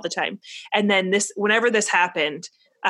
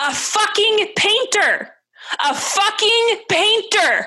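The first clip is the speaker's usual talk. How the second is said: put-on acted, very high, shrill little-boy yelling; 13 semitones higher, 4 dB louder than usual. A parent retells overhearing their young son during a game, imitating him shouting. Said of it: "is shouting".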